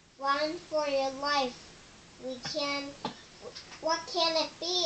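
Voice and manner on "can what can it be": plain reading voice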